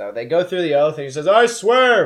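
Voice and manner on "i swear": very high, very loud tiny-cat voice. Voicing a tiny cat swearing an oath in court: very loud cat voice. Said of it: "very loudly, out of this tiny little cat mouth".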